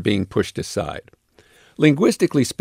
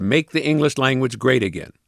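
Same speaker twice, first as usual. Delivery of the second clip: usual speaking voice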